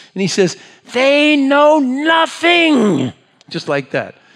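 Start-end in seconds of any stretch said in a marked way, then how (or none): 1.0-3.1 raised, very high-pitched, emphatic voice. Acting out what a professor said into the microphone, retelling his raised voice. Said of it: "He raises his voice".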